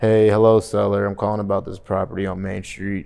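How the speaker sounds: mock flat, low-energy delivery. Showing how a caller sounds when their energy is down: imitating a low-energy caller. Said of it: "automatically their energy is down".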